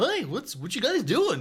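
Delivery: very high, very loud, swooping pet-dog voice. Trying out a voice for the dog: voicing the dog Opie. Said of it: "maybe that's the voice for the dog".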